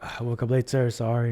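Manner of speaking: put-on mumbling voice. Retelling apologizing to a teacher for being late: imitating own mumbling. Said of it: "mumbling, mumbling at the time".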